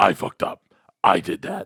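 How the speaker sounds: gruff put-on voice. Mocking someone's apology by imitating his voice: imitating someone's gruff voice. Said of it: "this gruff".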